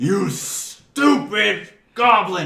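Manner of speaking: enraged shriek, very high, shrill and very loud. Voicing Logal after a waiter spills drinks on him: furious Logal. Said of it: "And Logal is absolutely furious".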